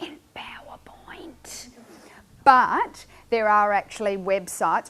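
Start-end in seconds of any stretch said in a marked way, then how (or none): 0.0-1.7 soft, hushed whisper. Presenting inquiry-based web activities, the speaker whispers an aside. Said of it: "and I'll whisper this".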